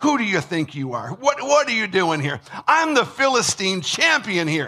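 mock sneering, condescending, looking-down snarl. Imagining how the Philistine champion spoke, imitating a condescending snarl. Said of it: "a little bit of a snarl".

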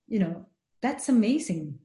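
ordinary talk, nothing marked

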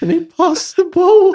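mock, very high, loud, tearful blubbering. Describing a video, the speaker imitates a tearful man, imitating someone crying. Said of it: "but like crying".

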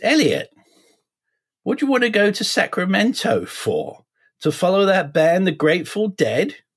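put-on very proper English accent, very high and swooping. Retelling what the speaker's mother said while apartment hunting, very proper English accent. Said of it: "in her very proper English accent".

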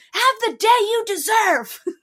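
shrill, very high, very loud, drawn-out scream. Retelling a passenger screaming out the car window at a woman, retelling a scream. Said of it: "just screams out the passenger side".

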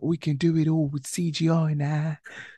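soft, light, slow voice. Retelling a director's reply to an actress about a film, soft James Cameron impression. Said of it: "James Cameron got a softer voice".

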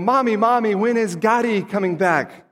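put-on high little kid's voice. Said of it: "I can hear the kids saying".

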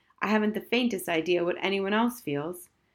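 ordinary talk

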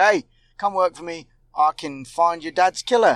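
plain

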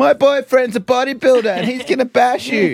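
imitated drunk woman yelling. Retelling a street fight video: imitating a drunk woman yelling. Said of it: "was yelling at a man".

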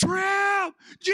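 acted, very high yell with "Trip" stretched long. Retelling getting soaked by a hose: imitating own yell. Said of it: "I yell".

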